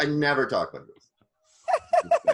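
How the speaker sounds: animated swooping yell. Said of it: "I'm yelling".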